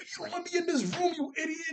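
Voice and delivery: high, fast, rattled-off, frantic freakout. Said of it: "Sissy starts to spaz off".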